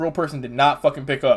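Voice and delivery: ordinary talk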